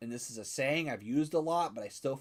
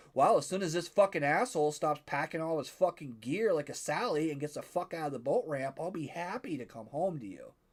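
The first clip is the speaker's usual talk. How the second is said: ordinary talk, nothing marked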